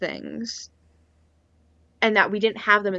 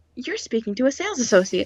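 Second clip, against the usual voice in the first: ordinary talk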